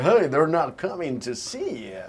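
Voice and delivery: put-on, forced American accent, swooping. Retelling delivering a scene line after being asked to drop the accent: forced American accent. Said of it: "my American version".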